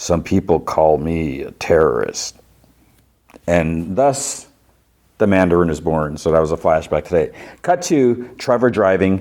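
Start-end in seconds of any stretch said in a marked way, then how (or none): 0.0-2.3 low, deep voice dropped an octave. Retelling how an actor read a line for the casting director, lower-octave Mandarin voice. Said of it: "in a lower octave".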